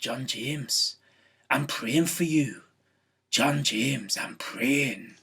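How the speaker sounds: put-on Scottish accent, firm, slow and stern. Speaker imitates a lady who fixed him with her eye: put-on Scottish accent. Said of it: "she had a Scottish accent, so I'll do my best".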